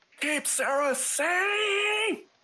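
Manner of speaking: loud, shrill, high scream, voice cracking, drawn out. Narrating a battle as the group splits up and takes cover, Zatari's loud, broken scream. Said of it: "screams out in a very loud, like, broken voice scream".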